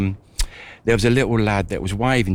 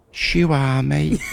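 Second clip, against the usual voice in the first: put-on little child voice, much higher pitched; 7 semitones higher than usual. Retelling what a young boy said while shaking hands, child's little voice. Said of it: "in his little voice".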